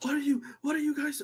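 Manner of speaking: very high, high-pitched angry shouting yell. Voicing a character hanging on a rope who calls up at the players: yelling. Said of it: "he's just yelling at you guys".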